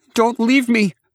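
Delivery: vehement shout, very high and loud. Olivia, about to be checked by the doctor, shouts at the narrator: vehement shout. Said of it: "Olivia shouted".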